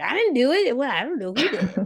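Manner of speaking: high, fast, feigned innocent tone.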